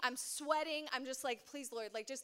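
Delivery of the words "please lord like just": frantic, cornered, panicked begging. Retelling a casting call, imitating own past panic. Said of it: "I'm, like, panicking. I'm sweating".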